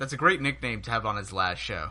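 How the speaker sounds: normal talking voice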